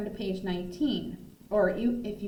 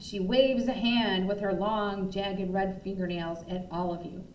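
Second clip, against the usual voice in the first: ordinary delivery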